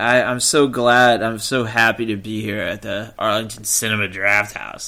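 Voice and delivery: heavily sarcastic tone.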